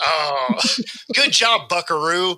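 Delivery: patronizing, condescending tone. Retelling how a basketball player taunted an opponent, imitating a condescending little league dad. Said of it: "Like full on the condescending little league dad".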